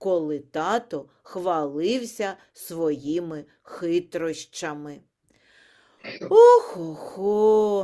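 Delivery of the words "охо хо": sighing, louder. A narrator reads the father sighing again over his son, sighing. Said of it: "ще раз зітхнув тато Ларсон".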